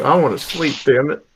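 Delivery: quiet, muttered, grumbling complaint. A narrator voices a character who gets up, grumbles and picks up his axe: grumbling.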